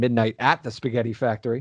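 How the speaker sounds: heavy stress on the word at. Saying the name Midnight at the Spaghetti Factory, stress on the word at. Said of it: "I'm emphasizing the at now".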